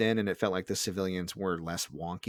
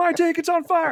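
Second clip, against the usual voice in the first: shrieking, frantic, very high, loud panicked scream; 7 dB louder than usual. Speaker acts out what a man kept screaming while being driven: retelling a panicked scream. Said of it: "And he's screaming".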